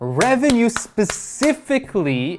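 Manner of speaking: high, slow, stretched-out excited voice.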